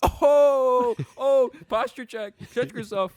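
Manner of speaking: very high, very loud, shrill, drawn-out teasing call. Retelling what the father says in the kitchen: imitating his dad. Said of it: "and he goes".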